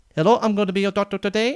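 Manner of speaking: put-on Indian accent. Speaking as a doctor introducing themselves, in a put-on Indian accent. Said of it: "in an Indian accent".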